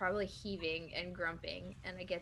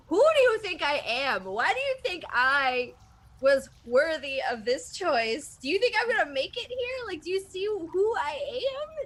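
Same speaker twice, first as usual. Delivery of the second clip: very loud, very high-pitched yell; 10 semitones higher, 12 dB louder than usual. Playing a character screaming up at a cavern ceiling, yelling in character. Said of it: "Are you yelling this?".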